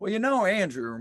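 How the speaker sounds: put-on Southern accent. Retelling what a man said after hearing the track, imitating a southern accent. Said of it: "with the Southern voice".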